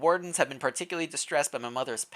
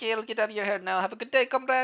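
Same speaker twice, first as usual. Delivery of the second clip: pitched-up, possibly put-on Russian accent; 6 semitones higher than usual. Voicing a game character taking leave, in a possibly Russian put-on accent. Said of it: "Is that a Russian accent?".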